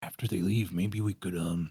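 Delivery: soft, hushed, secretive half-whisper. In a role-playing game, speaking in character to the group, half-whispering. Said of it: "I'm whispering, by the way".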